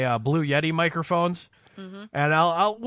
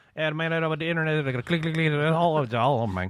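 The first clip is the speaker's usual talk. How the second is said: put-on Texan voice, fast mumbling. Doing the one Boomhauer line known, about internet conspiracies: Boomhauer voice. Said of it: "I can only do one thing for Boomhauer".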